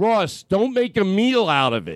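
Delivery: put-on western Pennsylvania Pittsburgh accent. Retelling what Ross says to James, in Ross Bennett's Pittsburgh accent. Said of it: "in his Pittsburgh accent".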